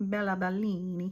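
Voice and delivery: playful put-on Italian accent. Naming a blush shade during a makeup tutorial, in a playful Italian accent. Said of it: "since I'm talking in an Italian accent".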